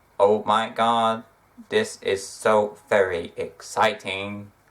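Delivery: monotone, flat robotic drone, very slow pace. Teasing someone for sounding fake, saying a line in robot voice. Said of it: "I may as well just been in robot voice".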